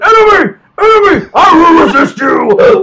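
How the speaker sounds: high, shrill, slow, drawn-out screaming at top volume. Retelling a clip of a man confronting a picture of another man, imitating someone screaming. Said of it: "And he just started screaming".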